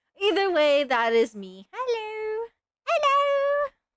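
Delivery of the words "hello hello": tiny, very high little-guy voice. The speaker shows off a favorite put-on voice; little guy voice. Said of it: "My little guy voice".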